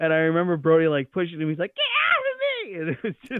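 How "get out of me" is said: very high-pitched, squeaky voice. Retelling a big friend's cry when Brody pushed him, imitating buddy's high-pitched voice. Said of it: "had such a high pitched voice".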